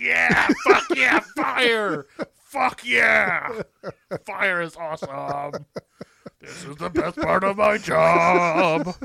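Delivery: very loud, slow, rough, raspy belting. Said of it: "That's my [name] impression".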